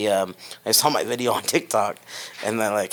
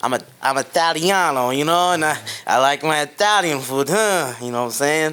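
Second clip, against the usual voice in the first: very bad fake Italian accent, pitched up; 5 semitones higher than usual. Asked about comfort food, the speaker answers in a bad Italian accent. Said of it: "That's probably the worst Italian accent".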